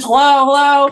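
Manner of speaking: mock easy, mild calling out, projected. Speaker recounts running down the trail after someone who walked past: retelling yelling into the woods. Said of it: "I'm just like yelling into the woods".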